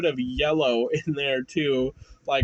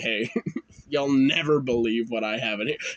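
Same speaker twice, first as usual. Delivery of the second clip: put-on smug, boastful voice, lower; 4 semitones lower than usual. Retelling showing friends a bag as a kid: imitating own smug voice. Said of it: "saying it the most smug way".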